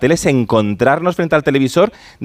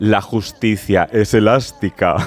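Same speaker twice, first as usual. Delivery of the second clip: low, deep, wicked villain voice; 4 semitones lower than usual. Quoting a line from the series Herederos to the other speaker, Concha Velasco evil voice impression. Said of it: "con voz de muy mala, malísima".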